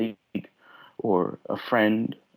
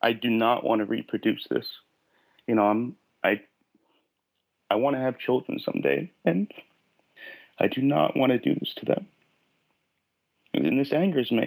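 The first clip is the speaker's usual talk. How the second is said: choked-up voice catching with emotion. Answering a question about covering up feelings, choking up. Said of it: "I'm choking up".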